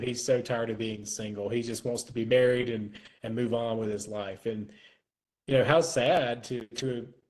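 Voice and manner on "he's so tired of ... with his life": usual speaking voice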